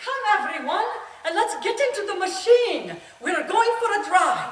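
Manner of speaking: put-on high, loud, called-out Irish accent, grandmother voice. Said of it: "my Irish grandmother in her Irish voice".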